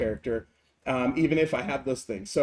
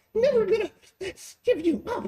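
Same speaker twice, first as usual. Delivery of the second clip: very high, squeaky cartoon voice pitched way up. Demonstrating how to make a voice silly, in a Mickey Mouse voice. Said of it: "trigger your upper voice".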